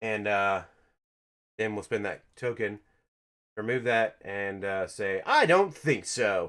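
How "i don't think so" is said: put-on high, slow, drawn-out cartoon voice. Explaining a card play, saying the line in Spider-Ham voice. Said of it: "in your best Spider Ham voice, which I just did".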